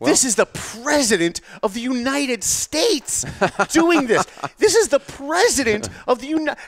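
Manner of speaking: very high, drawn-out, scornful news-anchor tone. Imitating news anchors talking about the president, mock-disdainful. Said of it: "they say it with such disdain".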